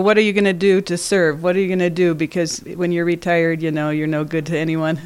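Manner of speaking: ordinary talk, nothing marked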